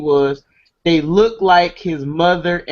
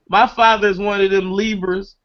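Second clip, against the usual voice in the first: ordinary delivery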